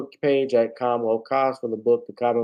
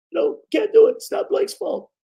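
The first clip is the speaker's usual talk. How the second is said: worn-out, hoarse, croaking coach voice; 3 dB louder than usual. Speaker, losing their voice, says they sound like the Clippers coach: Doc Rivers impression. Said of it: "Doc Rivers".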